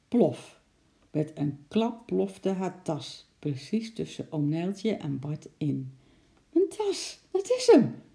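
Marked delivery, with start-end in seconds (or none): 6.5-7.9 very high, loud, delighted, glad call-out. A lady sees her lost bag land beside them, calling out happily. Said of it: "riep de mevrouw blij".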